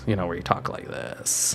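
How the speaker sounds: very quiet, whispery, creaky vocal fry. Recalling criticism of how they talk, demonstrating vocal fry. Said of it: "having voice fry in your voice".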